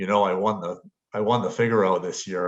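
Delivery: ordinary delivery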